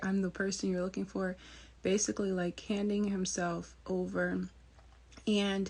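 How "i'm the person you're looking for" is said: plain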